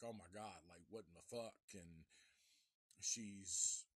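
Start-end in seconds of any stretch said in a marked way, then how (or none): 0.0-1.6 frantic, panicked, fast, rattled-off freaking out. Retelling a guy's reaction to a knock at his dorm door, mock freaking out. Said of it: "he's like freaking the fuck out".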